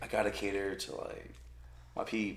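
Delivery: disappointed, deflated, very quiet near-whisper. Retelling what a girl answered when he asked why she was there, imitating a disappointed girl. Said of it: "why she sound so disappointed?".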